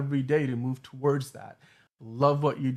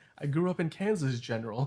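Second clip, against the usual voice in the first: put-on American accent with British accent slipping through. Quoting Superman's line about growing up in Kansas: Henry Cavill Superman impression. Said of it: "as Henry Cavill Superman says".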